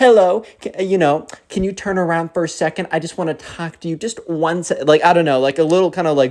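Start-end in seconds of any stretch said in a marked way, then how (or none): 0.0-4.8 acted-out patronizing, condescending baby talk tone. Retelling how a stranger asked two boys to turn around: imitating a condescending babying voice. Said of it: "kinda like a babying voice where they try and baby you".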